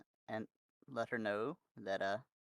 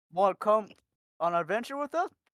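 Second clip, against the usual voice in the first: speaking while chewing, higher and louder; 10 semitones higher, 10 dB louder than usual. Speaking in character to a mule, talking with food in mouth. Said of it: "while still crunching on it with food in my mouth".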